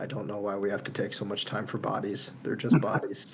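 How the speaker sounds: low, grumbling mumble under the breath. A player voices Arguvar mumbling under his breath. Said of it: "just very mumbling under his breath go".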